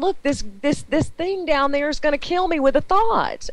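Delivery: acted-out terrified, horrified, high-pitched scream. Retelling being horrified by a creature, retelling her own screaming. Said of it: "and I'm screaming".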